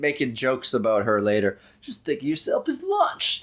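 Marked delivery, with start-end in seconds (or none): 1.8-3.4 high, sassy, wisecracking quip. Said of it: "to sassy and wisecracking".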